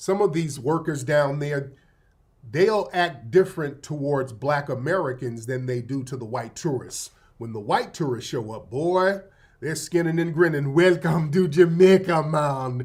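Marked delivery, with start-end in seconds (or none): 10.7-12.9 slow, thrown-on put-on Jamaican accent. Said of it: "y'all throw that accent?".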